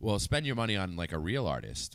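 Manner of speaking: ordinary talk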